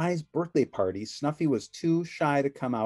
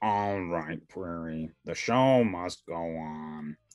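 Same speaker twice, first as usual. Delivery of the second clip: very deep snuffling voice, drawn out; 9 semitones lower than usual. Reading a story aloud, the narrator gives Mr. Snuffleupagus his deep snuffle voice. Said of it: "said in his deep snuffle voice".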